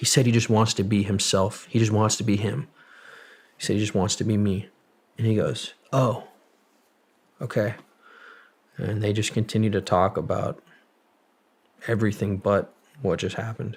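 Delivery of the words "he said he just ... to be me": ordinary delivery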